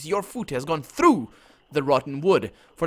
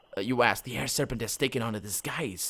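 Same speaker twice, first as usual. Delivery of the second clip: ordinary delivery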